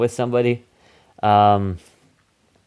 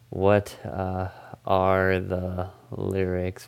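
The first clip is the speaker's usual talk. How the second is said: odd, slow, drawn-out, stretched delivery. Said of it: "Why am I talking like this?".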